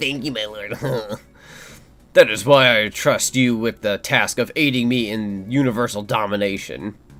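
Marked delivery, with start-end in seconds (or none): 0.0-0.8 soft, nerdy voice. Voicing Entropy thanking his lord: nerdy voice. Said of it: "I should make him sound like a nerd".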